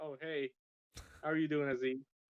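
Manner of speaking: mock flat, level, toneless monotone. Retelling a greeting and the reply, in Zach's flat monotone. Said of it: "he's just most monotone".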